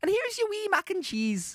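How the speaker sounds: high-pitched woman's voice. Retelling what a lady who brought some stuff said, imitating the visiting lady. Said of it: "she was like".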